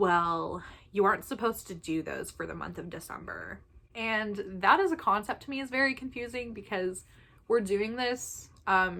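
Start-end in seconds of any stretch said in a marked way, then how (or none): none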